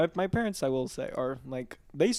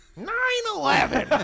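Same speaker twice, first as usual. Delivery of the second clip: shrill, loud comic voice squealed high; 6 dB louder than usual. Doing the short joke in the voice just discussed: Gilbert Gottfried voice. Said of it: "It's funny in that voice".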